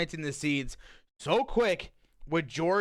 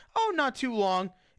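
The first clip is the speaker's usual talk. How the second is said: put-on gentle, very polite, slightly high voice; 7 semitones higher than usual. Retelling a movie scene, answering the real estate lady: imitating Kathy, very polite. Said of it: "she says it very polite".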